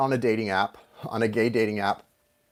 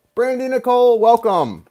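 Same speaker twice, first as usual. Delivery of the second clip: very high, loud voice, chewing with mouth full; 11 semitones higher, 6 dB louder than usual. Welcoming someone by name while eating an apple, talking while chewing. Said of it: "I'm chewing my apple, sorry".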